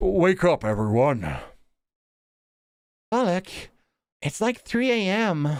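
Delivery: put-on old man voice, half monster. Voicing a game character waking everyone at three a.m., in an old man voice. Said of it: "Why am I doing old man voice?".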